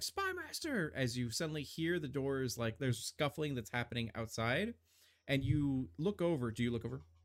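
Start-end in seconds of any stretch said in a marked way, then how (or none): 0.0-0.9 very high call, as if across a room. Voicing Barrow calling out from the distance: calling out. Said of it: "kinda call out to you and go".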